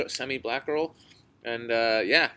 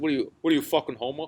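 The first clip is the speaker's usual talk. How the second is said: put-on Boston accent; 2 semitones higher than usual. Retelling what a guy in Boston would say to him, in a Boston accent. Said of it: "Saying in the Boston accent".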